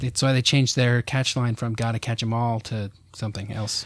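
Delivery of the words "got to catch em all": usual speaking voice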